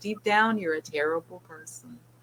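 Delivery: mock, very sweet, sugary delivery. Retelling what is said to a pet bird: imitating saying it very sweetly. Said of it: "I say it very sweetly to her".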